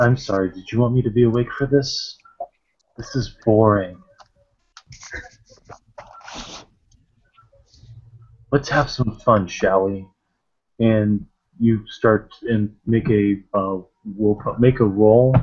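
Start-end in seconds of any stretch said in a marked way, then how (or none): 0.0-10.1 sinister, menacing, swooping voice. Game master voicing a voice in the back of a player's head, sinister voice. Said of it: "that kind of sinister voice in the back of your head".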